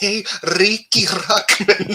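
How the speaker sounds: put-on thick Puerto Rican accent, high and loud. Retelling a friend heckling a performer during MTV filming: imitating thick Puerto Rican accent. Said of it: "thick Puerto Rican accent was heckling".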